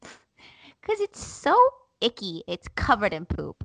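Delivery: put-on cute, squeaky, tiny-child chipmunk voice. Retelling what Matilda told the speaker; imitating Matilda's chipmunk voice. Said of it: "her voice is so cute, guys. It's like a chipmunk".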